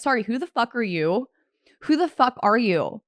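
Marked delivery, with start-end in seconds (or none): none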